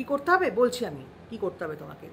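ordinary talk

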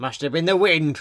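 usual speaking voice

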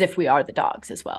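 ordinary delivery

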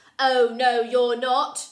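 domineering, bossy, very loud voice. Reading a story aloud, voicing George turning the twins away: bossy voice. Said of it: "He's got a very bossy voice".

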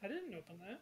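very soft, hushed, barely voiced words. Voicing the mom after the players spot an open window: very soft voice. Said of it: "She kinda just says very softly".

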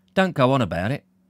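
plain

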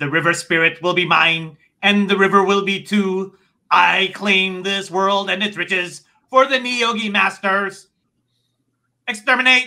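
screeching, high, loud, furious monster voice. Narrator voices the Niyogi master speaking into your mind: screeching, angry voice. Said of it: "you feel the screeching, angry words".

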